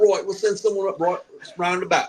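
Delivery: put-on Australian accent. Speaker retelling a toilet mishap with friends laughing, put-on australian accent. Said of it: "I'm just gonna do Australian".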